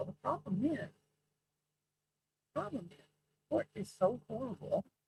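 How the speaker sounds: barely above a whisper. Speaker complains about the court's acoustics, in a near whisper. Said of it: "I am all but whispering right now".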